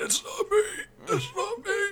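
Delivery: high, strained mumbling.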